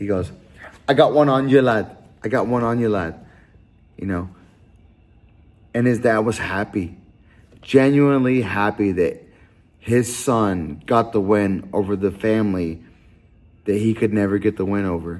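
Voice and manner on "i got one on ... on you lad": put-on English accent. Retelling what a son told his dad after a win, in an English accent. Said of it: "let me do my English voice".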